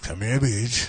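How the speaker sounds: lewd, creepy, lustful dinosaur voice. Asked for their best dinosaur impression, answering with a creepy dinosaur impression. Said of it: "can we get your best dinosaur impression?".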